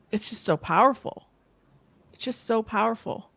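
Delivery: tearful, on the verge of crying. Show host responding to what a guest talked about, tearing up. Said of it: "I'm like tearing up here".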